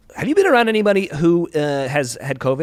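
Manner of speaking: play-acted suspicious, pointed, accusatory tone. Retelling what the woman in charge asked: imitating an accusatory tone. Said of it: "kind of accusatory".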